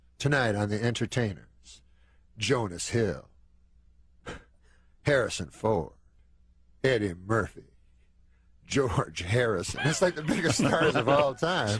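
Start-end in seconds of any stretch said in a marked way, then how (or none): 0.2-9.8 put-on talk show host announcer voice. Retelling how a junket interviewer opens his late-night show: Byron Allen voice. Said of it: "Byron Allen's voice".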